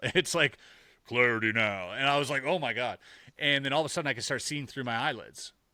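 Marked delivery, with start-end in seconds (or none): 1.1-1.9 deep, menacing, forceful demonic devil voice. Recounting speaking aloud in an altered state, deep menacing devil-like voice. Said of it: "I demanded it in a deep, deep voice that scared me. ... it sounds like the devil".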